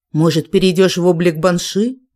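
ordinary delivery, nothing marked

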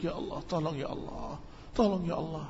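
quiet, low whisper. Showing listeners how to pray quietly to God: whispered prayer. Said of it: "dengan berbisik".

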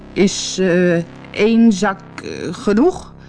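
trembling, quivering, shaking voice. Reading a tale: a farmer holds a sack of gold up to the troll, trembling voice. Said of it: "vroeg met trillende stem".

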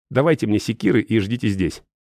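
ordinary delivery, nothing marked

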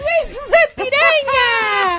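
put-on high-pitched child yelling.

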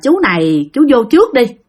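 ordinary delivery

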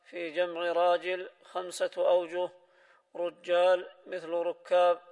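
ordinary delivery

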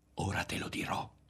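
whispering. Narrating one character speaking to another as he keeps going, whispered. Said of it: "sussurrava Berto".

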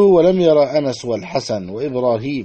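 ordinary talk

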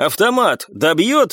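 unsure, doubting, questioning tone. Narrator voicing a character calling over a growing roar, shouting doubtfully. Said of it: "с сомнением крикнул Николай".

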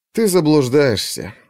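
with a sigh. A man answers another man's contemptuous refusal, with a sigh. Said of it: "вздохнул Алексей".

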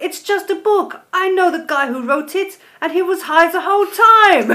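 clumsy fake German accent, loud and high. A podcast host reads out the line of the week in a bad German accent. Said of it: "That's German accent's getting worse".

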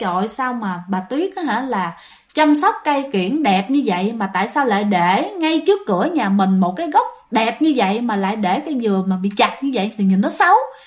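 ordinary talk

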